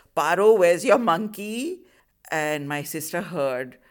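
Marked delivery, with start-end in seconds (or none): 0.2-1.8 very loud, high, carrying, blurted out. Recounting what a friend said on arriving at the house, retelling a very loud question. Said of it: "So very loudly she said".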